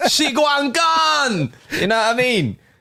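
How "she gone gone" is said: imitated Jamaican accent. Joking about a sick hitman name, in a put-on Jamaican accent. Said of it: "in a Jamaican accent".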